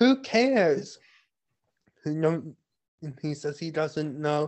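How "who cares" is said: put-on irritated, loud, shrill heated angry outburst. Retelling a scene where she answers him: imitating an angry retort. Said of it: "she's angrily like".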